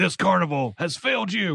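comic-book crusader voice, masked superhero style. Retelling a show character's line, delivered in a Batman voice. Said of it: "They gave him a fucking Batman voice".

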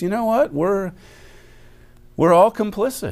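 mock smooth scholarly speech. Imitating how a politician he criticizes sounds: imitating slow scholarly delivery with pauses. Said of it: "in a scholarly way or a smooth sounding way says".

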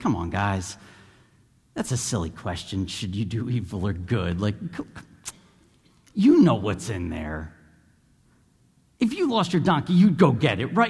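very low, sarcastic, matter-of-fact, logical-sounding delivery. Reading a Scripture passage aloud, delivering it in a mock-snarky, logical tone. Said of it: "very logical but snarky".

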